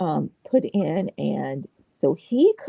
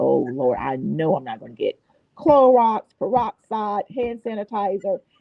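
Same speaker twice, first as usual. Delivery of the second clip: plain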